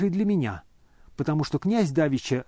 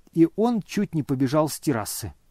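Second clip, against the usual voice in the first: usual speaking voice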